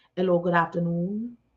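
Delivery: put-on Jamaican accent. Retelling a phone call, the speaker quotes the caller, imitating a Jamaican accent. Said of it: "heard the Jamaican accent on the other end".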